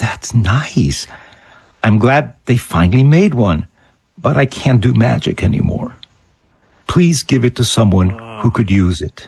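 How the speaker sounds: quiet put-on boxer's voice. Retelling Muhammad Ali declining a magic prop: imitating Muhammad Ali speaking quietly. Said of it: "quietly said".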